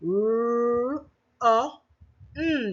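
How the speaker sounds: run with drawn-out r, each sound spaced with pauses. Sounding out the word run for children: pause after each sound. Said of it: "You notice there is a pause after each".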